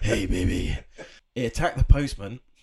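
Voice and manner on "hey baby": low, seductive put-on sexy bedroom voice. Answering another speaker's remark on the voice: put-on sexy voice. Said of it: "Sexy voice".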